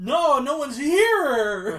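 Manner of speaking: nervous yell, very loud, very slow and high. Voicing Scooter talking to people at the door: louder, higher nervous voice. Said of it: "Scooter getting louder and louder and higher and higher voices".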